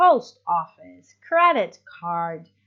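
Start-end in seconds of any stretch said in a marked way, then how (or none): 0.0-1.1 stress and higher pitch on post in post office. Explaining stress in compound nouns: stress and higher pitch on post. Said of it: "the emphasis is on the first word and the pitch is a little bit higher".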